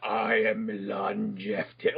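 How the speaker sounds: very slow, very deep, dazed delirious voice. Showing how one would imitate Milan: slow delirious deep voice. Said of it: "talking really slow and delirious".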